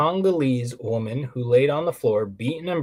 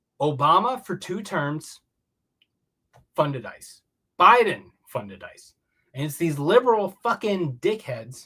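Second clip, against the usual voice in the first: heated, worked-up, high-pitched angry ranting tirade; 5 semitones higher than usual. Ranting about who funded ICE, getting angry. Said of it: "I'm getting a little angry".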